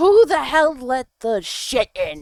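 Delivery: very loud, booming, shrill yell. Narrator reads Freya answering from inside after a man calls her, Freya's booming shout. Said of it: "her voice booms".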